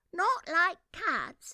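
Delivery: passionate, shrill, loud, mouse-like cry. Reading a story, the Mouse cries out to Alice in a shrill, passionate voice. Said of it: "cried the Mouse in a shrill, passionate voice".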